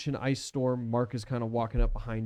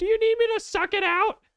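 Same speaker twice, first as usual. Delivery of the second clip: very high, chipper, cheerful, cheery voice; 7 dB louder than usual. A voice speaks up from behind the players, cheery, chipper voice. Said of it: "cheery, chipper voice".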